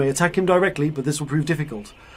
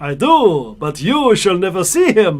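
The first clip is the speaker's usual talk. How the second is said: loud, theatrical put-on vampire voice; 4 semitones higher, 6 dB louder than usual. Narrating a game, voicing a creature woken in its coffin: vampire voice. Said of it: "I should be doing a vampire voice".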